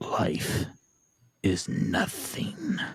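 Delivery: deep, low voice. Voicing a scaly creature speaking to a player in a dream: deep voice. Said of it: "you hear a deep voice".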